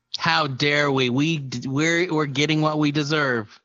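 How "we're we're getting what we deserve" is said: normal talking voice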